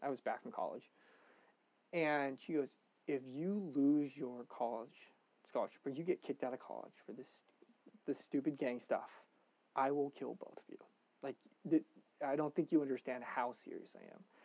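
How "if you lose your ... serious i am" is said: mock stern, dead-serious voice. Retelling a mother's warning to her kids: imitating a stern mother's threat. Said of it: "looks at us with the most stern face".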